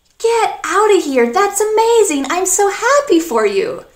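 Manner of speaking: happy, surprised tone. Teaching an American expression, demonstrating a happy surprised exclamation. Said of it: "an expression of surprise, of happiness".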